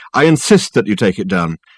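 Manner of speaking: plain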